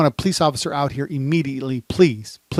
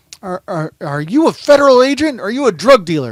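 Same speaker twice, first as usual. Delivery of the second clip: stammering, raised, pitched-up screaming; 6 semitones higher, 6 dB louder than usual. Retelling how a man screamed at him, imitating someone screaming. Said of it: "and he's screaming that at me".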